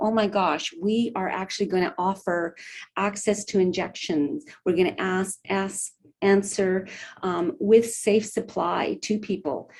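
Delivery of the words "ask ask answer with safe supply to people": ordinary talk, nothing marked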